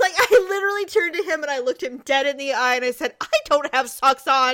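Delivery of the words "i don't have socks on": indignant, angry, pointed, tantrum-like tone. Retelling complaining to an official about removing boots: imitating own angry tantrum. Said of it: "I was so angry".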